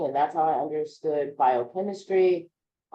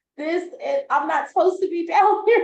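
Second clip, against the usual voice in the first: alarmed, freaked-out panic, acted out; 13 semitones higher, 4 dB louder than usual. Retelling panicking on the couch after hitting weed: retelling own freaking out. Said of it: "And I was just freaking out".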